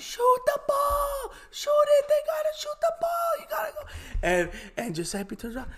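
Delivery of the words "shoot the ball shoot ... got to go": put-on yelling, much higher and louder. Retelling the one person standing by the bench yelling: imitating Antonetta Politi yelling. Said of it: "she's yelling".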